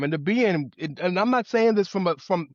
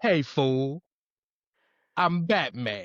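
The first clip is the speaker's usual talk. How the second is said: put-on grizzled old brute voice, lower pitch; 3 semitones lower than usual. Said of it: "T line".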